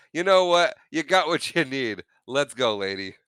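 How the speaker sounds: put-on sarcastic tone. Retelling a reply after being asked to drop the sarcasm: imitating a sarcastic reply. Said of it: "how about we do one without the sarcasm?".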